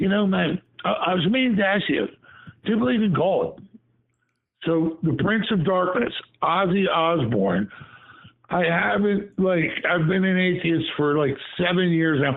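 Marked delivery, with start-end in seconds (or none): 0.0-3.6 rapid, stumbling, rambling mile-a-minute patter. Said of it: "Ozzy's talking a mile a minute".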